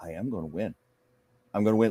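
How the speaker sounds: play-acted firm, simple, certain, resolute, direct tone. Retelling how she said it in an interview: imitating a resolute, direct declaration. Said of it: "tone of her voice ... Very resolute, very simple, very direct".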